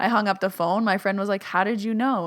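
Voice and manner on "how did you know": normal talking voice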